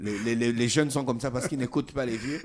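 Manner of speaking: loud, laughing, teasing tone.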